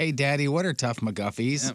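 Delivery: put-on sweet, cute little kid voice. A dad repeating his young daughter's question to him, in a cute little kid voice. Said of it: "I heard the cutest little voice go".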